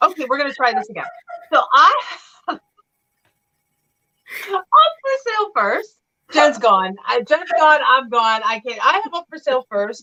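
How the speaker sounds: laughing, tearful words broken up by laughter. Trying again to present an item for sale, laughing while talking. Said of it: "Tears of laughter".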